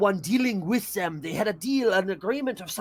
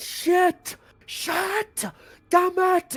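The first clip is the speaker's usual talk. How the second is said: very high, slow, drawn-out scream; 11 semitones higher than usual. Voicing a character who realizes he is powerless: screaming in character. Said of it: "he's just screaming as he realizes".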